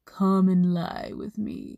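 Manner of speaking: put-on sultry, would-be seductive tone, coming out creepy. Acting out grabbing Joseph by his clothes: mock-seductive voice, comes out creepy. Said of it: "in a very seductive tone asks ... that wasn't seductive at all. That was creepy".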